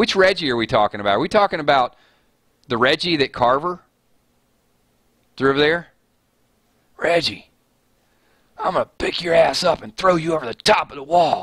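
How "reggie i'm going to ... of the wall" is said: menacing, threatening put-on character voice. Speaker talking about Walking Dead characters, doing his Carver voice. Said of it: "That's my Carver voice".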